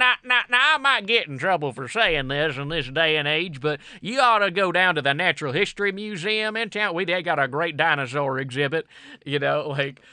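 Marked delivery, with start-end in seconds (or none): 0.0-8.9 put-on Southern gentleman character accent. Playing a gentleman who seems about to say something offensive, southern gentleman voice. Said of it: "It's like this like Southern gentleman".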